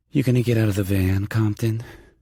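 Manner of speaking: seductive voice. Reading a romance novel aloud, a woman teasing her partner: sultry voice. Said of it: "Rachel says in that sultry voice".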